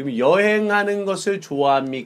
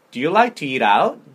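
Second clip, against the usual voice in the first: rising intonation at end. Showing a learner how to ask the question: rising intonation at the end. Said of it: "맨 뒤에를 올려야 돼요".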